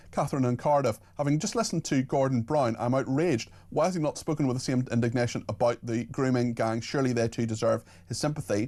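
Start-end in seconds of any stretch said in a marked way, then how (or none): none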